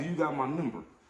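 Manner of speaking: ordinary talk, nothing marked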